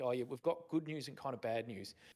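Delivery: ordinary delivery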